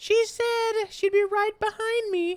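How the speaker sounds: adult's put-on child voice, very high and slow. Imitating a game character's line, as an adult doing a child voice. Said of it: "Kinda like".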